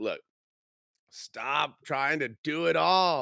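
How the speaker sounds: put-on loud, rising, drawn-out full-on shouting. Recounting when they were screaming at him, retelling screaming at someone. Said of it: "I'm just screaming at him".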